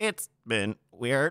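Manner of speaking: put-on synthetic computer-assistant voice. Closing a podcast episode, saying the sign-off in an AI voice. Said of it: "That's my AI voice".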